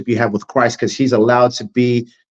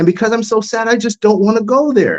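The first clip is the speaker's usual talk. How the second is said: mocking little girl voice, higher pitch; 10 semitones higher than usual. Retelling how they mocked a young girl's way of talking: mocking a little girl's voice. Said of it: "And I'm using a certain voice".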